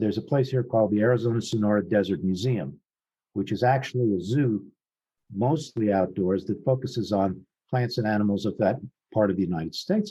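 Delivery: ordinary talk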